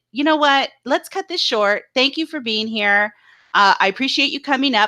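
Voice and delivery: plain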